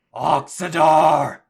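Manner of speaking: loud, slow, drawn-out bellowed yell. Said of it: "Terraconus yells out".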